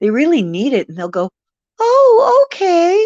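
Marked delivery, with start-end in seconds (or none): 1.8-3.1 put-on very high, tiny, raised little childlike voice. Describing how the ones asked to send rain reply, little childlike voice. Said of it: "they have these little childlike voices".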